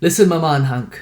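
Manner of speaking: put-on hard Jamaican accent. Retelling what a woman told the speaker as a small child, in a hard jamaican accent. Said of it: "she has a hard Jamaican accent".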